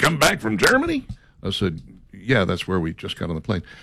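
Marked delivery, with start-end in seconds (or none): 0.0-1.1 put-on Texan businessman's accent, pitched up. Retelling what a businessman asked him on the plane home, in a texas accent. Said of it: "he had a Texas accent".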